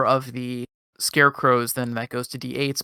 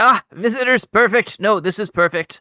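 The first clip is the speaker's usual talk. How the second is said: short, high, little vole creature voice; 8 semitones higher, 4 dB louder than usual. Voicing a hunched vole who greets arriving visitors: voicing a vole character. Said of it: "He's a vole. ... and he says".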